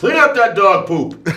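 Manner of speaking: very loud, very high, shrill, booming, drawn-out wild holler. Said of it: "yelling at us again".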